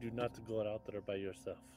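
hushed, barely audible half-whisper under the breath. Player voicing their character in a tabletop game, speaking to v: half-whispering under breath. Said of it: "I'm whispering under the breath".

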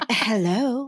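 put-on breathy, airy hello. Retelling how someone answered the phone: imitating a breathy hello. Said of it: "It was kind of breathy".

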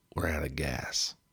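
put-on American accent, a fair attempt. Retelling a driver announcing the van is out of gas: attempted American accent. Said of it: "Apologies for my accent there".

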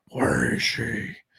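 rough, creaky, scraped-out caped superhero voice. Picturing coming out in costume with a smoke machine: Batman voice. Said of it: "Just come out like".

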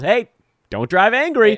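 mock high-pitched yell. Quoting a famous movie scene where the character yells: imitating Bill Murray yelling. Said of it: "where he just yells".

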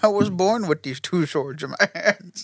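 put-on villain voice. Joking about Kratos speaking with Bane's voice, doing the Bane voice. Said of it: "Kratos comes out with Bane's voice".

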